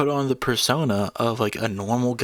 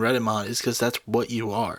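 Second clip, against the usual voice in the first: usual speaking voice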